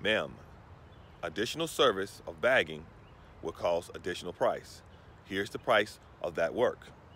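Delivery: low, polite, courteous, businesslike professional voice. Retelling how the speaker answered a woman, in a polite professional voice. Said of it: "I informed her in my professional voice".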